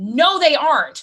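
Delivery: acted-out loud, furious yell. Retelling shouting at a TV interview in the middle of a store, retelling angry yelling. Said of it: "yelling at a television in a store".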